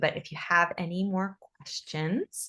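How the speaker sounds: ordinary talk, nothing marked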